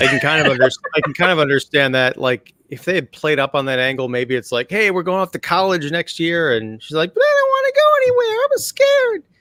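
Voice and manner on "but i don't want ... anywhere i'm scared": put-on girl voice, much higher. Reimagining a high school scene, imitating the girl character's voice. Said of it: "I'm trying to do that voice".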